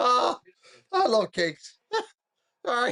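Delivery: loud, breathless words gasped out through laughter. Speaker, in tears after someone in the chat hung up, breathless from laughing. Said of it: "I can't get my breath".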